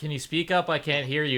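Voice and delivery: ordinary talk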